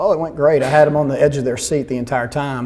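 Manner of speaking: normal talking voice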